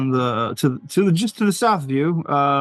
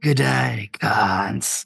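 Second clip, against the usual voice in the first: whispering, lower in pitch; 4 semitones lower than usual. Voicing the Lucrata whispering in a player's ear: Lucrata whispering. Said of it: "the Lucrata whispers in your ear".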